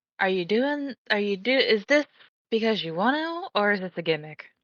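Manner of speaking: speaking in a whisper. Voicing a character who asks the woman who greeted them: whispering. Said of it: "is just gonna whisper".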